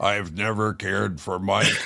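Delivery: fake synthetic computer voice, flat, slow, robotic. Joking about a guest's AI voice, showing how it sounds: mock AI voice. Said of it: "Does it go like this?".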